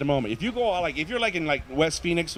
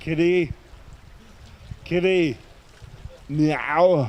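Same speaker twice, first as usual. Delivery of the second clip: put-on Austrian accent, "meow" drawn out. Impression of Arnold Schwarzenegger calling his cat at night: Arnold Schwarzenegger Austrian accent. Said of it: "This is Arnold Schwarzenegger looking for his cat late at night".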